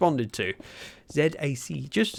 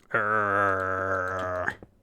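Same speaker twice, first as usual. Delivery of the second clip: low, drawn-out, dragon-like growl; 8 semitones lower, 3 dB quieter than usual. Streamer growls for the viewers watching the recording later; growling. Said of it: "That's me growling".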